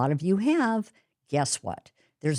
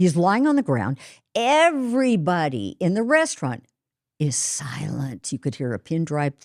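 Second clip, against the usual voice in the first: ordinary talk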